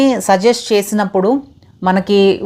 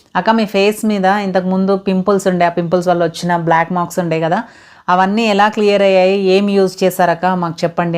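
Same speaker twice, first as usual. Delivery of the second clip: ordinary delivery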